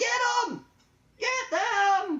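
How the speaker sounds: screaming. Narrating a tabletop game scene, voicing the man in it: screaming. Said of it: "the man is screaming".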